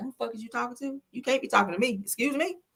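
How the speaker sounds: indignant, confrontational tone. Describing how they'd react if someone raised their voice: mock confrontational attitude. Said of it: "I'm going to be on that attitude".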